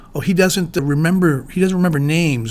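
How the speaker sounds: usual speaking voice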